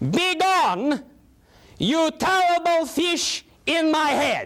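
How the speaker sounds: forceful, strong, commanding delivery. Speaker demonstrates for a listener the line they should shout, shouting. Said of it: "Shout in a loud voice".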